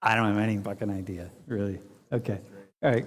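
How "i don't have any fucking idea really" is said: embarrassed, sheepish tone. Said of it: "you're sheepishly saying".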